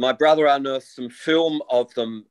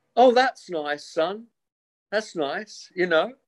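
put-on unbothered, indifferent tone, higher; 6 semitones higher than usual. Retelling mother's reply to an expensive purchase, imitating her unbothered attitude. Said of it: "that would be her at-, at-, attitude".

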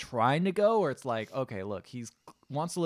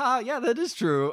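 mock, very high, loud, laughing through words; 10 semitones higher, 5 dB louder than usual. Retelling a film scene where the parents laugh: imitating the parents laughing. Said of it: "both the parents laugh like".

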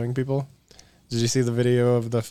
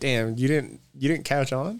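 usual speaking voice

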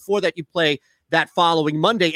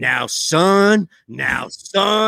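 put-on weathered old Southern coach voice, very slow. Imitating a video game coach character: old weathered Southern coach voice. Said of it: "this character who's a coach and he keeps".

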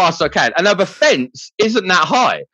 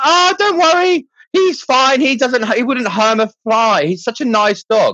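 breezy, unbothered, slow and cheerful delivery; 6 semitones higher than usual. Retelling a dog owner's reply after he ran off: imitating a cheerful woman. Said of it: "she's just happy as heck".

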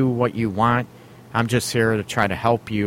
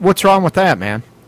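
raised, sarcastic, mock-innocent voice; 8 semitones higher, 8 dB louder than usual. Answering a caller on a relationship radio show: sarcastic. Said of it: "I'm being sarcastic".

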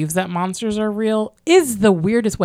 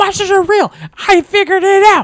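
very high, raised, shrill and loud screaming; 12 semitones higher, 7 dB louder than usual. Recounting an intense scene, the speaker acts out Sean going off, imitating Sean screaming. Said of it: "He is screaming".

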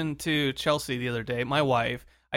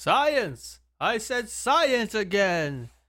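bad, goofy, pitched-up cartoon character voice; 6 semitones higher than usual. Discussing science featured on the show, doing a Homestar Runner voice. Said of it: "Doing my best worst Homestar impression".

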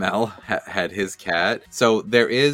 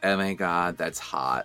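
soft, offhand, bored nonchalance with zero enthusiasm; 3 semitones lower, 5 dB quieter than usual. Describing a man she dislikes, the speaker mimics him, mock-nonchalant. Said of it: "I was thinking every nonchalant".

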